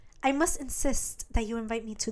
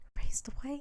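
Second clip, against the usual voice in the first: whispering, pitched higher; 4 semitones higher, 4 dB quieter than usual. Retelling a show scene where she whispers to him: imitating someone whispering. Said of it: "she whispers to him".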